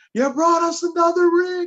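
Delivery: shrill, very high, all-out screaming. Recalling a Super Bowl win, the speaker re-enacts yelling at the GM: retelling his own screaming. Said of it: "I'm the one that's screaming".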